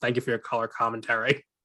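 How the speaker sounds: mock, put-on flat deadpan delivery. Retelling a remark someone made about an earlier episode; imitating a deadpan delivery. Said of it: "Peter deadpan goes".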